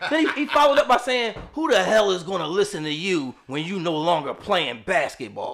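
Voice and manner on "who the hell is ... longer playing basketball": mock-disdainful, put-on voice, pitched much lower. Recounting what a man said to him, retelling a disdainful remark. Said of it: "to say it with such disdain".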